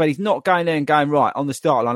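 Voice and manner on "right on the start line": plain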